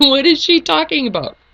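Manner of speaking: high-pitched, loud, puzzled, baffled voice.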